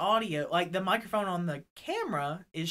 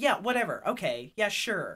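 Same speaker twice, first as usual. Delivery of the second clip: acted annoyed, pissed-off tone. Retelling own reply to a man after being there all day, retelling an annoyed reply. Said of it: "And I'm pissed".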